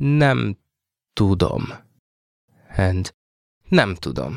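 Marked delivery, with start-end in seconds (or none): 0.0-1.7 slow, careful delivery. Showing a learner how to say the phrase: said slowly. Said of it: "Let's say it slowly now".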